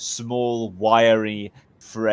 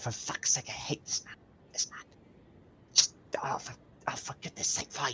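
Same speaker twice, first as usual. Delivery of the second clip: whisper, much quieter and higher; 4 semitones higher, 13 dB quieter than usual. During a ceremony, a character leans down and speaks into your ear, whispering in someone's ear. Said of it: "Misfortune like whispers in your ear".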